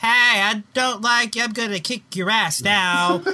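high put-on cartoon-style voice. Mock the fighter who opens her mouth in the video game, with a Rhonda impression sounding like Homestar Runner. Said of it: "Why do you sound like Homestar Runner?".

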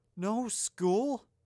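very loud, shrill, gasping cry of offense. Narrator reads the professor's reply, gasped, offended. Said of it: "McGonagall gasped again, this time even more offended".

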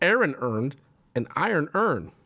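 Baltimore pronunciation. Saying a test phrase out loud for a Baltimore accent test: Baltimore accent. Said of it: "Baltimore accent test. Say this phrase out loud".

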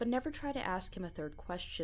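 ordinary delivery, nothing marked

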